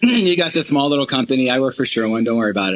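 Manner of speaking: ordinary talk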